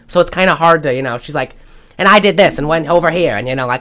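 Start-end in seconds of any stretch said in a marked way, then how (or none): 2.0-3.4 put-on fast-paced Mid-Atlantic accent. Imitating a film actress talking fast: Katharine Hepburn impression. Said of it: "has a Mid-Atlantic and talks fast".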